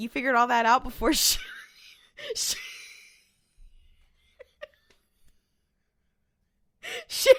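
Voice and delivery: words breaking up in hard laughter, swooping pitch. Retelling own reaction to a scene, laughing hard while talking. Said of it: "I don't know why I'm laughing so hard".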